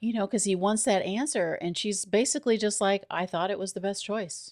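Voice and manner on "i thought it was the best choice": put-on offhand, nonchalant, matter-of-fact delivery. Retelling a woman's answer when a man asks why she did it, imitating a matter-of-fact tone. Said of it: "says it like so matter of factly".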